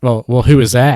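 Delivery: mock, really snarky, dismissive brush-off. Retelling a seller's reply to a buyer's price question: imitating a snarky voice. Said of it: "in a really snarky voice".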